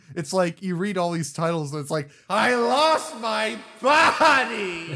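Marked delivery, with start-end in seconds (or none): 2.3-5.0 very slow, loud, drawn-out yell, pitched up. Reading a film title off a list written in caps: yelling the title. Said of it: "so it's literally just yelling it at you".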